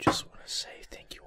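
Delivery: soft whispered speech. Thanking listeners at the end of the episode: whispering. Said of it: "now [name] starts whispering".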